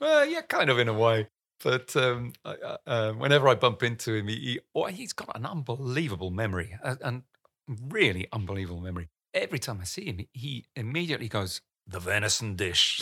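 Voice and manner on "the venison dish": put-on clumsy, poorly done Scottish accent. Retelling what Alex Ferguson says on meeting him: bad Scottish accent imitating Alex Ferguson. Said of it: "That wasn't a very good, uh, Scottish accent".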